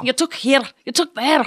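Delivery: Glaswegian accent, pitched way up, high. Recalling a fun extra take, the speaker repeats a line in a Glaswegian accent. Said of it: "So I did one with a Glaswegian accent".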